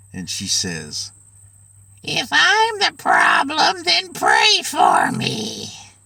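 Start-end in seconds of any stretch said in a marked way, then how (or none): 2.0-5.7 creepy, strange, unnatural, very high voice. Retelling a scene at the altar, quoting the mother-in-law in a weird, unnatural voice. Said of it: "She speaks up in this weird, unnatural voice".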